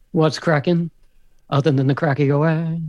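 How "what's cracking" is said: normal talking voice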